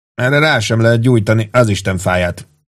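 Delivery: ordinary delivery, nothing marked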